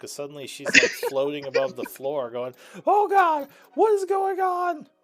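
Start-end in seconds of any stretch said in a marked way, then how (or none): 2.9-4.8 freaked out, panicked. Voicing her as she floats above the floor: freaked out. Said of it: "she's even more freaked out".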